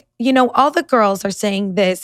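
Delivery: plain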